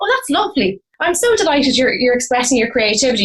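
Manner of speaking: high, sing-song, gushing, encouraging parent voice. Retelling parents praising a punk teenager's look: imitating parents. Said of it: "and mum and dad go".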